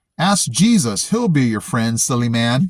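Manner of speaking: normal talking voice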